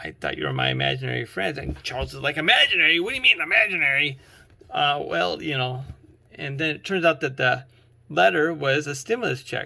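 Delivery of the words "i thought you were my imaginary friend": half-swallowed, mumbled mutter, sounding at a loss. Retelling a story, the speaker acts out a man's reply to another, mumbling. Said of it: "mumbling like".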